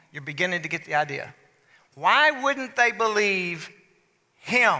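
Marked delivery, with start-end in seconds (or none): 1.9-4.8 heavy emphasis leaning hard on "him". Showing how emphasis shapes a question's meaning: stress on him. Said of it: "if you put the emphasis on him".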